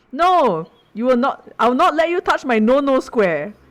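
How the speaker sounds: mock, very loud, high-pitched yelled outburst. Retelling what another person said in response, very, very loudly. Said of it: "very, very loudly".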